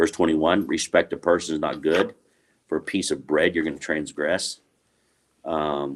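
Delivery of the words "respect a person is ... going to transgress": usual speaking voice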